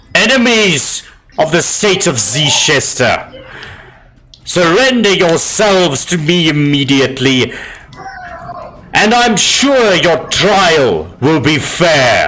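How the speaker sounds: loud commanding voice. Game player voices her character ordering enemies to surrender, in a loud voice. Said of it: "in a loud voice".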